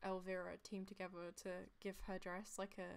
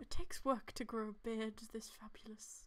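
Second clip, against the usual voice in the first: put-on old man voice, louder; 2 semitones higher, 5 dB louder than usual. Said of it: "old man Garoth voice".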